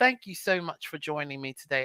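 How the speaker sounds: soft, polite, put-on English accent. Imagining wrapping up and thanking someone for joining, in an English accent. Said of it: "be petty in my English accent".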